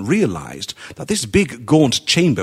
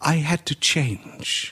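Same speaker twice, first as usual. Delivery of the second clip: quiet, soft, very slow and drawn out; 3 semitones higher, 6 dB quieter than usual. A woman repeats herself to a man after a pause, soft. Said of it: "she repeated softly".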